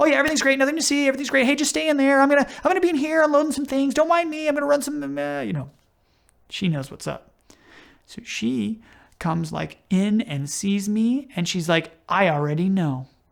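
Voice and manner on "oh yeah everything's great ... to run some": very high, nonstop, rushed, rattled-off chatter. Speaker acting out their past self reassuring her, talking fast. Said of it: "I'm talking fast".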